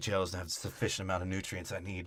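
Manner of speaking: quiet, deep voice. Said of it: "He's like".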